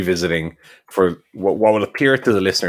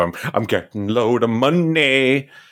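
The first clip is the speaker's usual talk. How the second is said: dry, slow, mocking sarcasm, "money" drawn out; 6 semitones higher than usual. Describing a wrestler's promos since his return: imitating MJF's sarcastic delivery. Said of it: "his kind of sarcastic delivery of".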